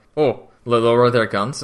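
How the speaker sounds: usual speaking voice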